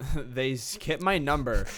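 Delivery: normal talking voice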